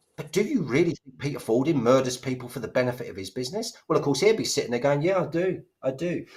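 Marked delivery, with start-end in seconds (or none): 5.0-6.3 very slow, drawn-out, dead-level monotone drone. Imitating a man sitting there answering a question: imitating a monotone drone. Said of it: "He's got this monotone drone".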